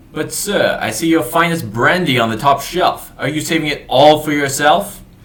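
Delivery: booming, very loud, high-pitched yell. Narrating a voice heard behind a door, yelling it very loudly. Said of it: "you hear a very loud voice yell".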